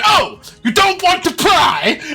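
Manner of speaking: very high, swooping, vicious sassy tone. Retelling a character's reply to a player: imitating Bumpkin's vicious retort. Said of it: "really viciously at you".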